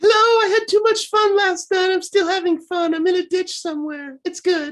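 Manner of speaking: very high, goofy, silly puppet character voice. A co-host holds up the puppet while you voice it: silly Puppet Lindquist voice. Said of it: "you can do the voice".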